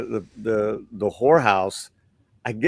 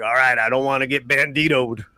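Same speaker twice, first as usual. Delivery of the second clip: put-on cowboy voice; 2 semitones higher than usual. Retelling a movie scene selling horses to a bandit: James Gammon voice. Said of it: "he kinda talks like this".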